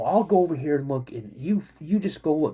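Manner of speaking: usual speaking voice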